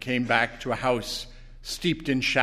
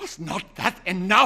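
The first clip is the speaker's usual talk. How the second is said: fierce, demanding, forceful retort tone; 8 semitones higher, 4 dB louder than usual. A man in bed answers a woman asking for more wishes, demanding fiercely. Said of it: "He demanded fiercely".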